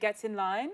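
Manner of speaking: put-on British-accented phrasing. Closing an interview, saying the phrase for fun: British accent. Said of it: "I'll say "get in line" in my British accent".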